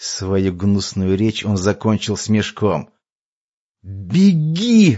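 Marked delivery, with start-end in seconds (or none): 3.8-5.0 word cried out at length, high, drawn-out. Narrator reads a man's cry to a girl while strangers kick him, shouting. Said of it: "вновь крикнул Дирт".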